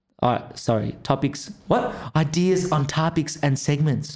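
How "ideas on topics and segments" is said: imitated American accent. Reading the co-host's poll aloud, impersonating the co-host. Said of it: "this is me doing my best impersonation of what ours sounds like".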